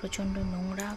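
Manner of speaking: soft whisper.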